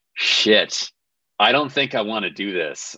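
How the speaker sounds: plain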